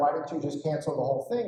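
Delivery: ordinary delivery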